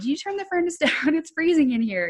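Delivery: yelling, pitched high. Speaker retelling how they yelled at their husband: retelling a yell. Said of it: "I'm like yelling at my husband".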